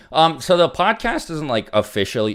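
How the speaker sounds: voice cracking up high, breaking mid-phrase. Speaker answers a question read aloud about another podcast episode, voice cracking. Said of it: "My bad for the voice crack".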